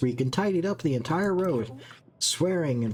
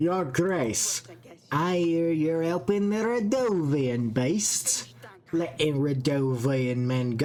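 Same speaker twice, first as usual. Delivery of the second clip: poor fake Scottish accent, slow. Voicing a female character addressing Your Grace, bad attempt at Scottish accent. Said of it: "I don't know what this accent is".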